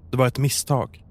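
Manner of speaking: ordinary delivery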